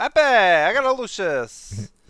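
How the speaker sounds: attempted Italian accent. Trying out how to say a name in an Italian accent, attempted Italian accent. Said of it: "that's more Jersey though".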